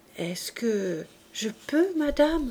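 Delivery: shy, hushed, timid murmur. Cosette approaches, turns toward the Thénardier woman and asks in a timid murmur. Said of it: "murmura timidement".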